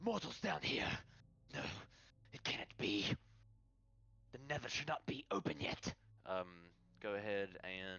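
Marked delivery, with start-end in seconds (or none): 0.0-5.9 hissed dark elf voice, high and swooping. The narrator voices a drow as the players become visible: hissing drow voice. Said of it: "the drow hisses".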